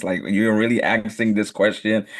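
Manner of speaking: usual speaking voice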